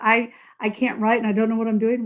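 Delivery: put-on tearful complaining tone. Retelling calling a friend to say she can't write: imitating own crying. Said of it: "when I call you up crying about".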